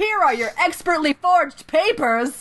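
shrill, super loud, high proclaiming voice. Describing a man handing over paperwork at a train station, retelling a super loud line. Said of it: "he says like super loudly".

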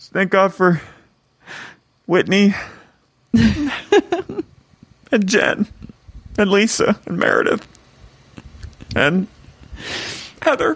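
very high, halting, weepy crying voice breaking mid-phrase. Retelling a woman at a lunch thanking the guests, imitating Mary crying. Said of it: "She's like crying".

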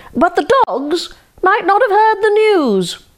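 very high-pitched, shrill shouting. Narrator reads the fox answering the chicken as he runs off; yelling. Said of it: "yelled the fox".

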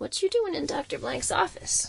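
sniffly, thick, hoarse rasp, very high pitch. A green boy staring at the narrator asks a question, sniffling, thick hoarse voice. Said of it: "he sniffled in a thick, hoarse voice".

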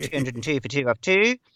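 called like a cricket commentator. Doing the late commentator Richie Benaud: Richie Benaud impression. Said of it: "you've gotta have the great late Richie Benaud".

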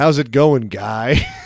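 imitated sarcastic tone. Showing how the word guy sounds in a greeting: imitating a sarcastic greeting. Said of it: "it's just always sarcastic".

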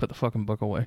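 hushed whispered aside. In a tabletop game, a player voices their character as the group walks up, whispering. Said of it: "I'm just going to whisper".

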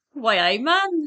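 bad Geordie accent. Asked by the other speaker for one, the speaker tries an attempted Geordie accent. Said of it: "Can you do a Geordie accent?".

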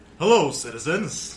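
booming, very loud character voice at full blast. Podcast guest greets the hosts in character, Revel Ranger voice. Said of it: "You don't have to do the voice".

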